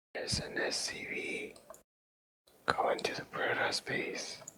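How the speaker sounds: hushed whispering voice. Casting a game, describing a unit moving toward a base: whispering. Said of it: "Why are you whispering?".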